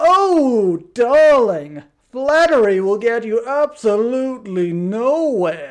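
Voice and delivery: theatrical put-on voice, loud, slow, flamboyant, drawn-out "oh". Showing off an impression of a typical darling-type personality, put-on 'oh darling' voice. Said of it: "I do that voice so well".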